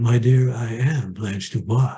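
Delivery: deliberate, unhurried, slow and drawn-out pronouncing manner. Quoting a playwright's answer about his character: Tennessee Williams voice. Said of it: "he said it like Tennessee Williams would say it".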